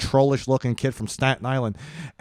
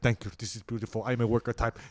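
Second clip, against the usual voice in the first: put-on smug, not humble, lower and quieter; 3 semitones lower, 11 dB quieter than usual. Retelling an audition, the speaker quotes the greek guy bowing, imitating an unhumble man. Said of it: "just not humble about it".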